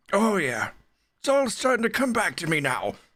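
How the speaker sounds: put-on elderly man voice, very high-pitched. Speaking in character while the others test weapons: old man voice. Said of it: "can't with the old man voice".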